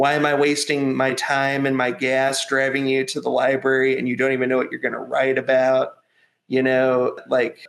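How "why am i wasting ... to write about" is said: usual speaking voice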